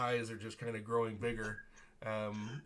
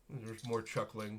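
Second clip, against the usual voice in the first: ordinary delivery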